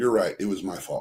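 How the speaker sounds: low apologetic voice.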